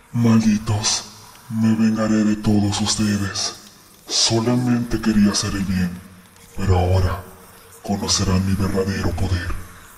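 very deep, very low demonic voice. Narrating the old man's head as it opens its eyes and speaks, in a demonic voice. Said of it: "con una voz demoníaca comenzó a decir".

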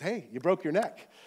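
ordinary talk, nothing marked

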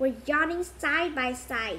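ordinary delivery, nothing marked

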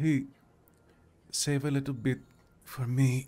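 gentle, quiet, soft voice. The narrator voices someone in the bed as the listener takes a swig, soft voice. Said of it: "you will hear a soft voice from the bed".

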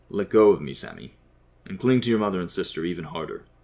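plain

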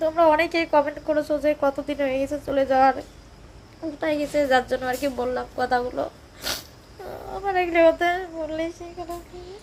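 tearful speech, crying while talking.

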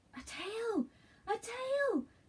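very high, very slow, drawn-out calling out. George tries to catch up with his grandfather, crying out. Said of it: "George cried".

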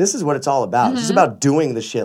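normal talking voice

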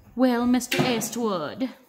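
put-on loud, laid-on-thick Irish accent. Quoting his mom from Back to the Future: super Irish accent. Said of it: "She's got this, like, super Irish accent".

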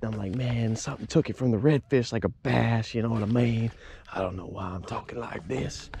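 odd, very soft hushed talking voice.

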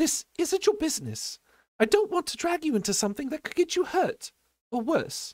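very high, sharply spoken. A girl refusing a boy's help, sharp. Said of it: "said the girl sharply".

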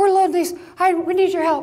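put-on breathless voice. Retelling your brother's urgent phone call for help, imitating being out of breath. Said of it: "I'm out of breath".

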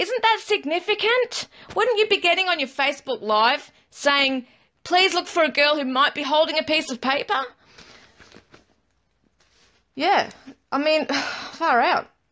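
high, heated, passionate, worked up, angry. Questioning why she didn't publicize a witness's account, getting angry and passionate. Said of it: "You can hear me getting passionate".

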